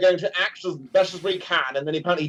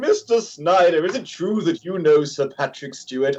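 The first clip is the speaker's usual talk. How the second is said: put-on drunken heckler voice. Retelling Patrick Stewart heckling someone at a convention, imitating a drunk Patrick Stewart. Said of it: "he drunk and he was like".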